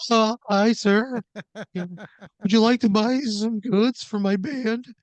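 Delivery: put-on very high, loud, cracking, breaking teenage voice. Retelling the other speaker at thirteen knocking on a door: imitating a voice cracking in puberty. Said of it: "your voice kinda cracked as you're, like, entering puberty".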